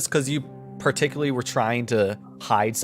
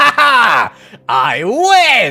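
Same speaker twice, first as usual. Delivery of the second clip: put-on gloating character voice; 9 semitones higher, 13 dB louder than usual. Voicing Xanathar hovering around the room after a win: voicing Xanathar gloating. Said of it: "hovers around the room a bit. It's like".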